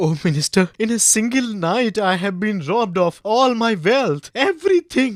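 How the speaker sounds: crying while speaking. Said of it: "And why is he crying?".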